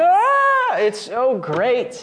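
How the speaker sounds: very slow, high, loud scream, "ah" stretched long. Host retelling a man's outburst coming off anesthesia, imitating a scream. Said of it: "he just starts like screaming".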